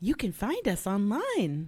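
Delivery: loud, swooping, acted-out surprised delivery. Teasing the co-host by repeating their line: imitating a surprised reading. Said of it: "You were like".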